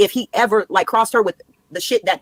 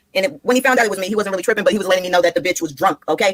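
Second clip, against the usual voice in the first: normal talking voice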